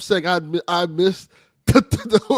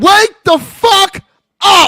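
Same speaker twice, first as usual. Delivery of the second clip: shrill, full-blast, very loud, high-pitched hype yell; 12 semitones higher, 9 dB louder than usual. On the show's four-hundredth episode, one host urges the others on: high-energy. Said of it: "That's the kind of energy".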